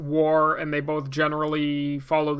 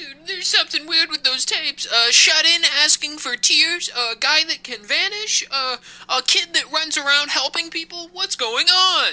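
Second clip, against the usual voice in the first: high, squeaky, frightened nerd voice; 12 semitones higher, 4 dB louder than usual. Playing Dan, who is then told to calm down, as a caricature. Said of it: "Why is he talking like this?".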